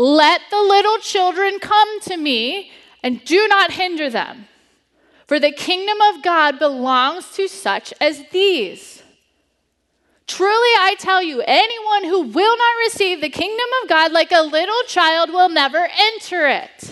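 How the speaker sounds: put-on heated anger. Reading Jesus's words from Mark 10 as he probably said them, acting out Jesus's anger. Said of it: "he was angry, so it probably sounded more like".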